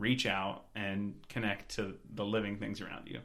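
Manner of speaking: ordinary talk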